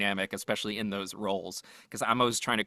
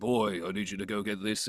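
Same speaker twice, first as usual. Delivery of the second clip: fake-ish, put-on British accent. Retelling a co-star's line from a mocap job: imitating Matthew's pseudo British accent. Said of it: "his pseudo British accent".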